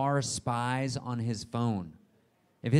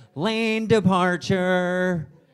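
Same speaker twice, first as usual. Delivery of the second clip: loud, high-pitched, nagging scolding voice; 6 semitones higher, 7 dB louder than usual. Imitating the car's lane departure warning: imitating a car alert like a scolding nun.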